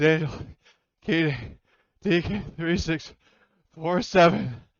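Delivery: delirious, teared up. Voicing a delirious, teared-up soldier in a game scene: delirious, teared up. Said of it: "he's just, like, delirious".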